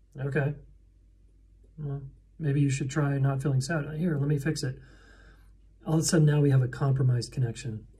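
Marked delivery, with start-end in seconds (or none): 0.2-4.0 flat, stoic, emotionless deadpan. Illustrating a reply to someone saying they feel sad, acting out a stoic deadpan reply. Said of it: "I'm like kind of stoic and deadpan, and I'm like".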